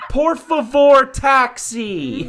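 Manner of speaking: exaggerated slow, over-clear English. Imitating tourists who talk to locals: imitating tourists speaking slowly. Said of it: "people think if you speak English slowly".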